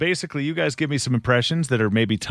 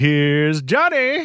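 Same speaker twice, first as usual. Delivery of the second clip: announcing voice, pitched a touch higher; 5 semitones higher than usual. Copying a played Jack Nicholson clip: Jack Nicholson impression. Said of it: "Another favorite of mine for Jack Nicholson".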